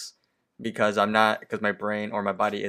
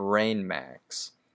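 usual speaking voice

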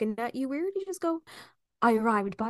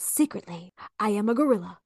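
whispered character voice. Reading a dare to whisper to a stranger, speaker whispers as Johnny Depp's Mad Hatter. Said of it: "whisper this in their ear".

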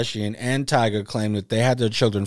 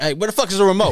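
relaxed, offhand, slightly higher pitch; 8 semitones higher, 4 dB louder than usual. Picturing T.I. at home asking for the remote: imitating T.I. at home. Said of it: "You be at the house like".

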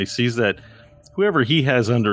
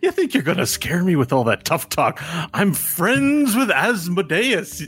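very high, taunting, laughing through the words; 9 semitones higher than usual. Voicing a skinny human who laughs at a threat: laughing while talking in character. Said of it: "The skinny human laughs. He goes".

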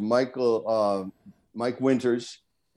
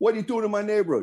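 mock very high, loud, raised shout; 10 semitones higher than usual. Retelling yelling at a film crew after Action: retelling own loud shout. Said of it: "And I say it loud".

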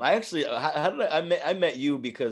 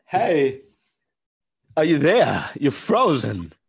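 put-on quirky halting voice, louder; 3 semitones higher, 8 dB louder than usual. Answering a request for a Chris Walken: Christopher Walken voice. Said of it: "You have a Chris Walken?".

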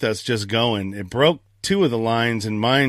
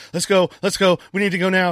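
mock-fearful pleading tone, pitched much higher; 8 semitones higher than usual. Recounting a scary moment beside the boat, retelling a fearful plea. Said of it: "You could hear the fear in my voice".

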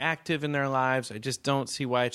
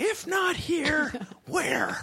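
put-on yelling, pitched higher. Retelling a man's angry speech at a meeting: imitating someone yelling. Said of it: "this is the part he got really started yelling".

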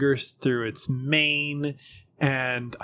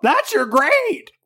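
bird call voice, higher and louder; 14 semitones higher, 8 dB louder than usual. Voicing a raven that lands beside the players: raven call voice. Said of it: "You gotta work on your calls there".

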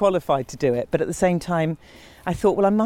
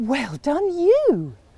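higher, condescending, patronising, talking-down tone; 8 semitones higher than usual. Retelling own past words to a fan who recognised them: imitating own patronising tone. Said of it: "It's the most patronising thing".

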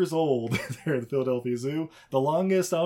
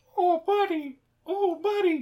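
very high, slow, drawn-out parrot voice. Retelling a movie scene where the parrot calls out: imitating a parrot talking. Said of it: "you hear the parrot go".

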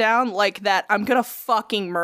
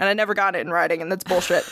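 ordinary delivery

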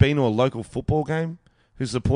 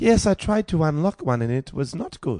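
put-on woman's voice; 3 semitones higher than usual. Imitating a female listener who also struggles with phones: imitating a female listener. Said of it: "There could be women too".

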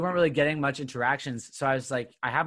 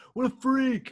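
mock, very high-pitched, shrill jeering shout; 12 semitones higher than usual. Retelling how a teenage boy reacted to the dancing: imitating someone yelling. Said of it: "he just yells".

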